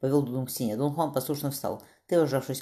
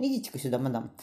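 ordinary delivery, nothing marked

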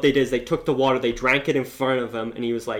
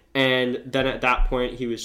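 ordinary delivery

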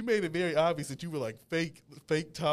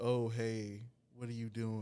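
put-on stoic nonchalant voice, lower and quieter; 5 semitones lower, 7 dB quieter than usual. Describing how Morpheus from the comics talks: nonchalant Morpheus voice. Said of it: "he's just very, like, nonchalant".

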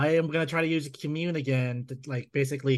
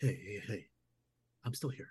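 voice not raised, quieter and level; 4 semitones lower, 10 dB quieter than usual. Player's character gets up to calm the spirit, not raising his voice. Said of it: "not raising his voice".

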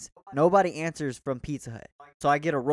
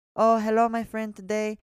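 put-on Indian accent, higher pitch; 7 semitones higher than usual. Retelling a phone call to a department, imitating the woman in an Indian accent. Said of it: "Someone from India or something".

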